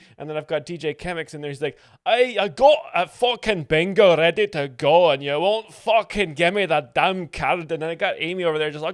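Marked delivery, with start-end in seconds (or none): 2.0-7.7 put-on booming, very loud, drawn-out, slow Scottish accent. A performer describes voicing a character demanding a card from someone, Scottish accent. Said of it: "I got to do an Australian accent for Amy".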